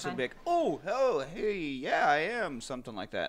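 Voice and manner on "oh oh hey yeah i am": caught off guard, very drawn out, slow, pitched-up. Imagining a scene, the speaker shows how someone caught off guard answers: surprised reply. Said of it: "Like a surprised".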